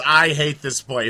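acted-out sudden yelled outburst. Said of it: "he just yells".

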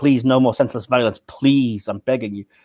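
put-on pleading alien officer voice. Retelling a scene where Saru begs Burnham to stop: imitating Saru pleading. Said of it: "Saru just pleads with her".

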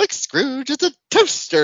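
high, loud, chirpy ghost voice.

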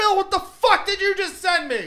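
shrill, very high, loud outraged scream. Retelling what was shouted from the bathroom: retelling a scream. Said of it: "I scream out".

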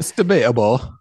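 put-on British English accent. Interjecting in a discussion about game judges: British accent. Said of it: "Great British accent, [name]".

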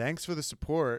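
fast, flat, mock expressionless, matter-of-fact deadpan. Retelling how Carlos answered a fan cheering for Charles; retelling Carlos's deadpan. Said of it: "he said it in this amazing deadpan".

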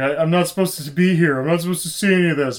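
play-acted tearful weeping, high and loud. Retelling a deleted film scene after a gun is drawn: imitating someone crying. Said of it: "starts crying, and he's like".

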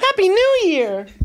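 high, slow, silly, goofy sing-song voice, drawn out.

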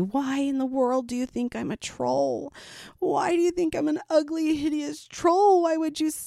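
acted tearful, high, sob-broken voice. Retelling what a woman said to the speaker, imitating someone sobbing. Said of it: "she starts sobbing and looking at the lady".

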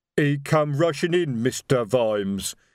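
slow, rumbling voice from the chest. Sergeant Detritus answers Vimes while holding a crossbow on someone, rumbling Detritus voice. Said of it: "rumbled Detritus".

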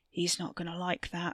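murmured aside. A man speaks while pushing another man through a door, murmured. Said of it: "Wes murmured".

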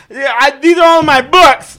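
screaming, very high-pitched and very loud. Retelling how a man ran up to a first responder: imitating someone yelling. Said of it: "Just yelling that".

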